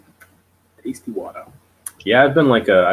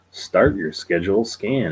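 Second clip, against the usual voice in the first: usual speaking voice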